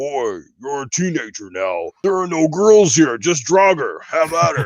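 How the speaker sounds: put-on gruff warrior voice. Imitating a game character addressing his teenage son: bad Kratos impression. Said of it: "not a very good Kratos impression".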